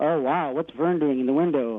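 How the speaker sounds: ordinary talk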